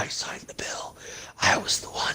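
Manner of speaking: hushed, soft, breathy whispered aside. Retelling how a president sounded at an event: imitating Joe Biden whispering. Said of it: "whispering, he's like".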